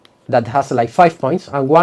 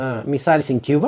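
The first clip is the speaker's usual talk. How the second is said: ordinary delivery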